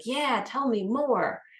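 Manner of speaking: happy, eager tone. Showing how a happy, smiling reply comes across as engaged: happy, engaged tone. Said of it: "if you're happy and you're smiling and you're like".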